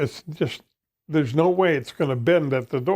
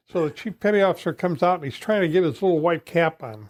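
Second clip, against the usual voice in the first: ordinary delivery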